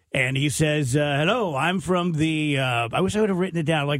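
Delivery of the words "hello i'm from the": imitated computerized robocall voice. Retelling a phone call from an unknown caller: imitating a computerized voice. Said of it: "he's talking like this".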